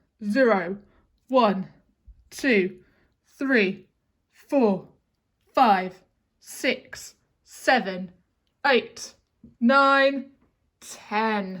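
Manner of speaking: put-on grumpy voice, loud and slow. Counting from zero with children in a put-on grumpy voice. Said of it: "let's do it in a grumpy voice".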